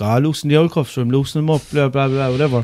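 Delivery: ordinary talk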